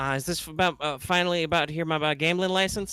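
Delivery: put-on thin, tinny young woman's voice like an intercom speaker. Voicing a woman answering over an intercom: tinny young woman's voice over intercom. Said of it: "you'd say probably a young woman's voice say".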